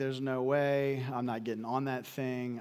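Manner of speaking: usual speaking voice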